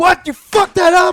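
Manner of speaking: shrill, high-pitched, very loud outburst. Retelling how he reacted to an employee's mistake: imitating his own loud outburst. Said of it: "I'm, like, loud".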